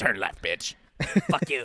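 acted demonic voice. Imagining a demon voice giving map directions, in a demon voice. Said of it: "I want the demon's voice to be my Siri".

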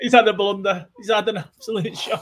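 laughing while talking. Discussing a player's name mix-up, cracking up laughing. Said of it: "I'm cracking up".

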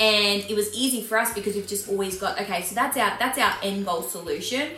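ordinary talk

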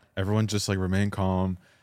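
ordinary talk

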